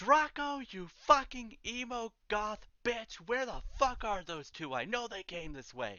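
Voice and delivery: high-pitched hollering, yelling. Voicing a character chasing the players down the hallway: Chandler yelling. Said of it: "Chandler yell".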